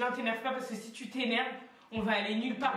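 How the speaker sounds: plain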